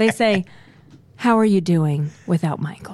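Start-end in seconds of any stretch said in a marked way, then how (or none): 1.1-3.0 mock sad concern, lower. Retelling what people ask on the street: imitating a sad tone. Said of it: "With that sad tone".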